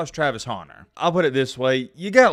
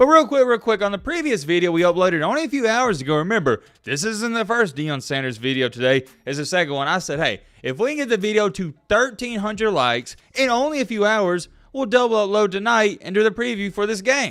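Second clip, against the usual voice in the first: thrilled, excited, buzzing, pitched-up delivery; 8 semitones higher than usual. A video host updates viewers on the previous upload: excited. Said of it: "I think you hear it in my voice".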